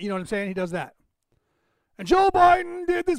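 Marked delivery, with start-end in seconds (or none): 2.0-3.2 very high, loud, raised scripted-reading voice. Showing how a candidate sounds reading the teleprompter: imitating Trump reading, a bit louder. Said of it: "He gets a little bit louder".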